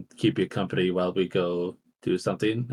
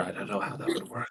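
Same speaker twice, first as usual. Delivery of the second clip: very quiet whispered aside under the breath; 11 dB quieter than usual. Speaking in character to a companion about the tree: whispering in character. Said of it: "I just whisper".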